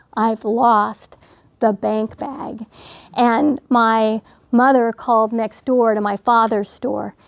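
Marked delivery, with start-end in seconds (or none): 0.2-2.7 acted-out, slow words forced out through crying. Retelling what was finally said to the mother: imitating choked-out crying words. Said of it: "I was able to get out the words".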